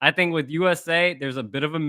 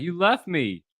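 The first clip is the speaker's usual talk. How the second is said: put-on tearful, blubbering, whiny crying voice; 3 semitones higher than usual. Describing a wrestling storyline, imitating the other man crying. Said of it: "He was crying".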